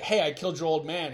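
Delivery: ordinary talk, nothing marked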